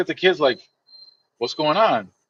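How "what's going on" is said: bewildered, baffled, confused, puzzled tone. Retelling how Soupy Sales reacted when the kids yelled: imitating Soupy Sales sounding confused. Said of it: "He would look confused".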